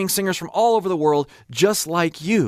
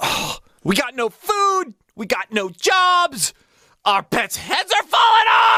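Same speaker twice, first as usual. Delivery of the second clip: goofy comic voice, higher, slow, "jobs" drawn out; 9 semitones higher than usual. Get into character from the film, as Jim Carrey in Dumb and Dumber. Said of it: "Jim Carrey, Dumb and Dumber".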